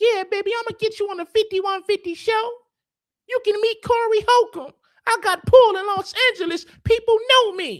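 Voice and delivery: squeaked out, very high-pitched. Mocking a man who promised him a spot on the show, Mickey Mouse voice. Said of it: "talking with his Mickey Mouse voice".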